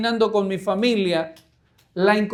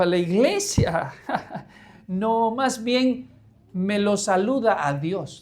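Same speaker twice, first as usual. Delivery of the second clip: derisive, jeering, slow and mocking; 3 dB quieter than usual. Retelling someone's reply when invited to church, imitating a mocking tone. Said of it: "en tono de burla dijo".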